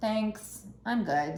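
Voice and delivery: smug, polite tone.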